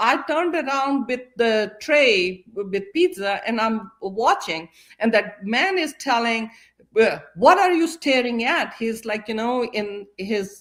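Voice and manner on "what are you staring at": raised, confrontational, challenging voice. Retelling what a man said to a staring boy: imitating a raised voice. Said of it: "voice raised".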